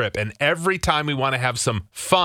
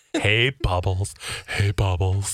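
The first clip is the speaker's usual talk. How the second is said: low, slow, sinister creepy clown voice; 5 semitones lower than usual. Trying out a code word for the co-hosts, in a scary clown voice. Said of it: "It sounds like a scary clown".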